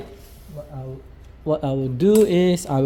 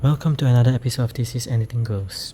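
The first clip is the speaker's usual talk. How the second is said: hushed, whispered voice; 4 semitones lower than usual. Host opening an episode at three in the morning while neighbors sleep: whispering. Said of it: "I'm whispering because it's three o'clock in the morning".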